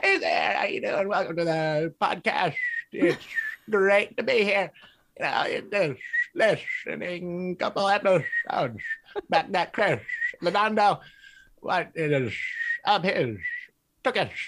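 animated cartoon gopher critter voice. Asked for a favorite go-to voice, speaker does Gopher from Winnie the Pooh voice. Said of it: "is a gopher from Winnie the Pooh".

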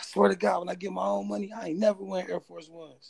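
sobbing through tears, tearful crying voice. Retelling what he said crying in the car, reenacting his own crying. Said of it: "I'm crying".

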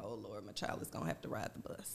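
hushed, breathy, fast whispered panic. Retelling how the bus schedule changed: retelling own panic. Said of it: "and I'm panicking".

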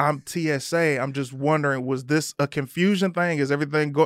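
ordinary talk, nothing marked

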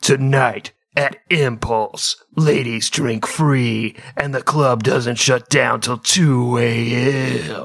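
slow radio promo announcer voice. Imitating promos heard on the radio: radio promo announcer voice. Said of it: "those radio promos?".

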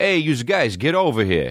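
put-on Italian-American accent. Playing a guy calling women over, in an exaggerated Italian-American voice. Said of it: "The most Italian you could be".

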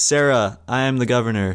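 ordinary talk, nothing marked

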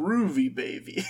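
retro seventies pimp voice. Retelling what the octopus says on landing: Octopapa seventies guy voice. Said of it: "He talks like a seventies guy".

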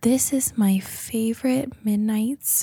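hushed, very soft, sweet, cute little voice. Imitating a video creator's usual voice for a listener: imitating her very soft voice. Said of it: "Very soft. That's the voice".

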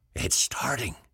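high, hushed whisper under the breath. The alderman watches the drunk men's heads begin to glow, whispering. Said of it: "whispered the alderman".

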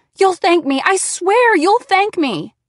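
high, desperate, pleading scream. Narrator, desperate, begging him over the phone to come; screamed. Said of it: "Stop shouting in my ear".

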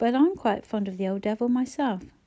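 ordinary delivery

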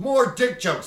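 put-on loud, high-pitched, drunken-sounding yell. Comedian recounting a drunk audience member yelling during the set, retelling a drunk guy's yell. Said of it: "one of the drunk guys just yells".

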